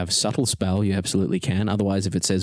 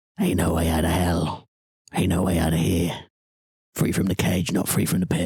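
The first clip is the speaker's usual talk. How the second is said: put-on devil character voice; 2 semitones lower than usual. Game master speaking to a player as the Chain Devil: Chain Devil voice. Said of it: "The Chain Devil looks at you and says".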